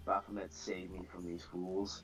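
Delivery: muttering under breath. In character during a role-play scene, muttering under breath. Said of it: "under my breath, just mutter".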